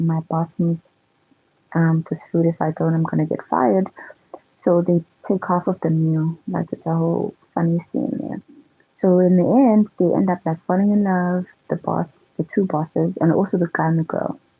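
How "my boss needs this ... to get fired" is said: ordinary talk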